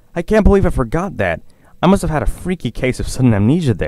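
joyful, happy, high-pitched cry. A pony, reminded of his own details, cries out happily. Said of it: "he cried happily".

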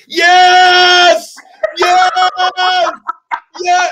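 very loud, very high, shrill scream, "yes" drawn out. Retelling a friend's reaction when the film ended: imitating a friend screaming. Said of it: "he started screaming at the top of his lungs".

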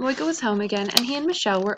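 ordinary delivery

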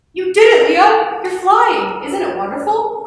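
crying out, exclaiming, high and loud. Narrator reading Otto's line as Leo's plane lifts off; cried out. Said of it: "cried Otto".

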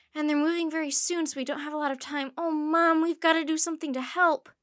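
loud, tumbling rush of words spilling over each other. A girl speaks to her mom, words tumbling out. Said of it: "Her words seemed to tumble over themselves".

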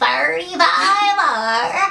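put-on slow, drawn-out old man voice.

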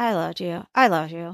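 low, soft, expressionless ventriloquist voice. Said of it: "Like he's a ventriloquist".

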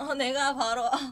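smug bragging, ending loud and laughing.

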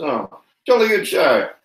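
high-pitched moth creature character voice. A game master voices the Elder Moth to the players, Elder Moth voice. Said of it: "The Elder Moth says".

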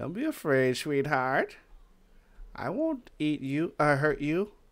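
put-on scary old granny voice. Streamer hunting players, calling to one named Ariana, in a granny voice. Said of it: "So you guys like my granny voice?".

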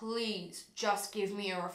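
mock, imitated begging, pleading tone. Recounting pleading with a woman who said she didn't need one, retelling begging. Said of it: "to the point where I was begging this woman".

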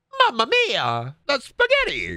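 very high, swooping character voice. Asked whether he can do Mario, the speaker tries it; Mario impression. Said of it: "You do Mario?".

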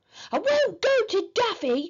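yelled back, high and long. Henry, scolded by Mum, yells back at his parents: yelled. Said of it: "yelled Henry".

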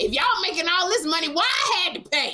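put-on indignant, shrill, very high angry griping. Retell how a woman got mad at them about having to pay, imitating someone mad. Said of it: "Kym got mad at them because she was like".

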